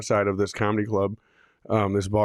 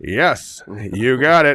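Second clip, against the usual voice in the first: very slow, loud, drawn-out drawl; 3 semitones higher, 6 dB louder than usual. Retelling testing stage microphones while doing Brody's voice. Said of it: "I'm doing Brody's voice".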